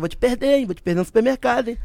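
mock, playful, teasing, fatherly threatening tone. Retelling how a father threatened to lose the speaker at the supermarket: imitating father's threat. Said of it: "meu pai me deixou no supermercado e falava assim".

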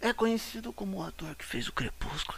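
very soft, very quiet, barely-there hushed murmur. Repeating another speaker's line about an actor: imitating someone speaking softly. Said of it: "o Yuri que até vai falando baixinho".

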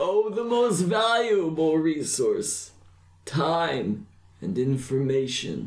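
put-on cryptic, folksy old man voice, slow and lilting. A game master voices a cloaked old stranger answering a player, old man character voice. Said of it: "a very tall, scrawny old man with a very large brown cloak, / a very tall, scrawny old man with a very large brown cloak, / and there's like an old man just kind of peering over [name]'s shoulder. / a".

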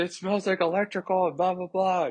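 shrill, very high screaming rant. Retelling how she opened the door and started screaming at him, retelling her screaming. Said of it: "she starts screaming at me like".

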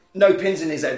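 ordinary delivery

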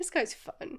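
ordinary talk

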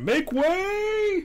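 very high, drawn-out shouting. Since no one else will, the player's character calls out; shouting. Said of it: "I'll just shout".

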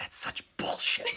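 mock muttering under breath. Speaker recalls a boy's mom reacting beside them, retelling a mutter under her breath. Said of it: "she goes under her breath".

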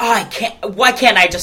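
put-on frustrated tone. Imitating the director in the film: imitating frustration. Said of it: "He's just so frustrated".

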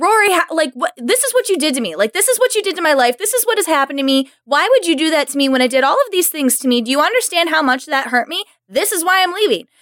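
mock indignant, yelling rant. Imitating a boyfriend character yelling at Rory during a breakup. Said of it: "the way he yells at her".

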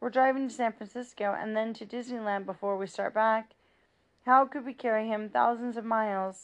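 ordinary delivery

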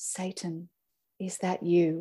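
slow, drawn-out, hushed half-whisper, breath only. Reading a parent's account aloud, the narrator voices what the parent half-whispered to the kids. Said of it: "and whispered".

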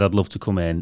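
ordinary talk, nothing marked

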